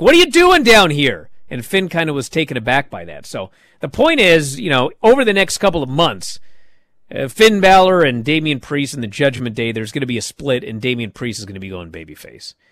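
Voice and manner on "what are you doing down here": put-on shout, loud yell, pitched high. Retelling how one wrestler confronted another who interfered in a match: imitating someone yelling. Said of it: "Damian Priest yells at him".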